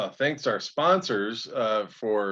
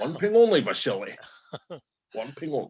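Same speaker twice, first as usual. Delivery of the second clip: put-on Russian accent; 4 semitones higher than usual. Joking about knighting Sean Connery, doing Sean Connery's mock Russian accent. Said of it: "Yes, this is a Russian accent".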